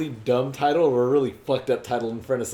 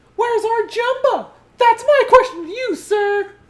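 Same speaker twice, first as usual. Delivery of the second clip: very high, loud character voice; 7 dB louder than usual. Joining in on a bit about a cartoon cat: Pleakley voice. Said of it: "sounded like Pleakley".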